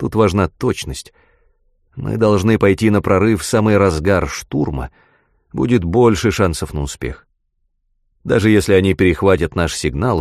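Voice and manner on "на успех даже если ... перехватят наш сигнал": plain reading voice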